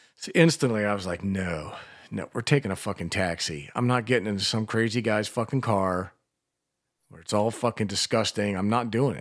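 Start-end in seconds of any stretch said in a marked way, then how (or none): none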